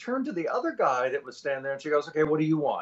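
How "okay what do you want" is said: put-on annoyed voice, higher pitch. Retelling how the bartender at the bar asked his order: imitating a frustrated bartender. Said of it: "she just got, like, frustrated".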